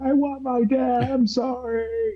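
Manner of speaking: mock very high, slow, drawn-out sobbing whine. Retelling a cartoon scene where a captured boy starts crying: imitating a crying kid. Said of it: "becomes this kid who's crying".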